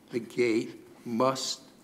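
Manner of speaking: must drawn out slow and weighted. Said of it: "I always underline the word must".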